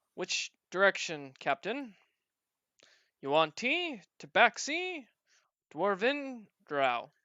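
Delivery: loud, swooping automaton character voice. Voicing an automaton asking the captain for a heading: voicing the automaton. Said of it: "the automaton looks at you, oh, and says".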